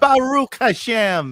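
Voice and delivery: bad Midwestern-accented Hebrew, very high and loud. Saying a Hebrew phrase as a congresswoman would: Haley Stevens Midwestern accent. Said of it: "her Hebrew would sound like in that Midwestern accent".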